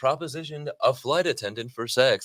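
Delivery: news-anchor reading delivery. Mocking how a newscaster read out the report, imitating a newscaster. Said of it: "this newscaster, she's like".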